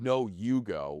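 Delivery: play-acted, very aggressive, pushy, insistent tone. Retelling an older woman's reply about who goes first: imitating an aggressive tone. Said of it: "this most aggressive".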